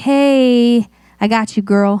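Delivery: put-on tender voice. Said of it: "right in that voice".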